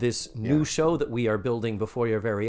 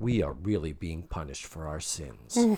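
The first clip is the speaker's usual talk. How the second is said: put-on deadpan, much lower and quieter; 8 semitones lower, 6 dB quieter than usual. Retelling Mindy Cohn's reply as someone leaves, imitating Mindy Cohn deadpan. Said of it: "beautifully deadpan".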